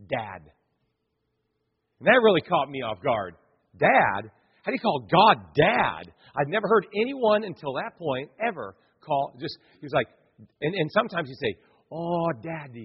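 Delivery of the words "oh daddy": put-on soft, gentle Jamaican patois accent. Recalling a man who called God Daddy, quoting him: Jamaican accent. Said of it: "in his Jamaican accent".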